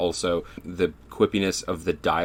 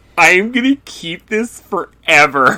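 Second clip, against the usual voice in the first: very high, loud, slow, drawn-out belted delivery; 11 semitones higher, 9 dB louder than usual. Retelling a movie scene where one character mimics another: imitating Emma Stone's impression. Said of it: "Emma Stone's impression of him is so good".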